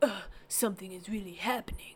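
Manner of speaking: quiet, soft, flat, dead-level monotone. Showing a listener how the actors did it in the Matrix, as a Keanu Reeves impression. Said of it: "That was a wonderful Keanu Reeves impression".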